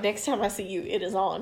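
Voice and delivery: normal talking voice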